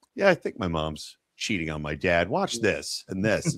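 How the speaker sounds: play-acted calm, detached, matter-of-fact dispassionate tone. Retelling how a character calmly tells about footage: imitating a dispassionate telling. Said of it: "it's very dispassionate".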